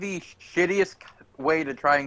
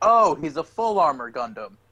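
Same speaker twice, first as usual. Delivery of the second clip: ordinary delivery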